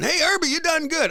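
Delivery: mock very high, rowdy, hollered shout. Retelling calling out to a jazz performer at a show: imitating own past yell. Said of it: "I'm yelling".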